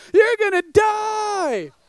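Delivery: high, tearful crying, "die" stretched long. Retelling the sister's words halfway down the jump, imitating someone crying. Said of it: "is looking and crying".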